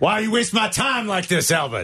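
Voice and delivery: high, tough movie-cop voice. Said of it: "I feel like Al Pacino in Heat here".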